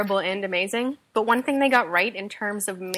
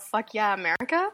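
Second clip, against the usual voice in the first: ordinary talk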